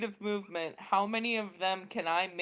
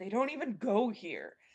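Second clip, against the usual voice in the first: fed-up grumble, said quietly under one's breath. Voicing an annoyed character who rolls his eyes: muttered under his breath. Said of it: "under his breath".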